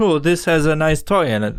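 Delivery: broken, non-native English, like an English learner. Retelling what a toy-unwrapping video woman said: imitating a woman with broken English. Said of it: "she sounded as if she didn't know English".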